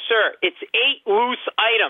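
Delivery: fed-up, high, worked-up, acted yell. Retelling an argument over a bag while his wife grabs his arm: retelling own yelling. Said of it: "And I'm yelling".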